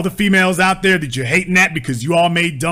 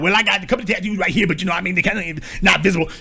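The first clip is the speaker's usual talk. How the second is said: fast, hushed, shady salesman voice. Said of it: "You sound like a shady used car salesman".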